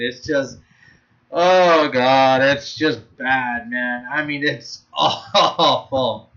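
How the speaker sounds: very slow, laughing through each word. Mocking an anime as boring and laughable, laughing while talking. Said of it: "I'm sorry if I'm laughing".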